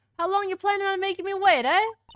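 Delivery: put-on New York accent. Voicing a man in a story, in an attempted New Yorker accent. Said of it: "I will attempt a New Yorker accent".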